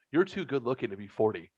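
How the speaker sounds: normal talking voice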